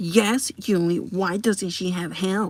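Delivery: creepy, slow, scary, menacing tone. Retelling what the boss said after turning around: imitating the boss's scary tone. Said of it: "scary and looks at me".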